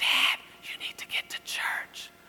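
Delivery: hushed whisper. Father retells his daughter answering his call: retelling a whisper. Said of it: "why are you whispering?".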